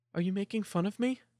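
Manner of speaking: put-on tiny, soft, scared little-girl voice. Narrator voicing Millie's reply to the other speaker: tiny, soft, scared voice. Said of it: "tiny and soft, the voice of a scared little girl".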